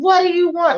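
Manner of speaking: mock angry tone. Retelling the landlord at the door: imitating a mean, angry tone. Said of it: "he's getting really mean, angry".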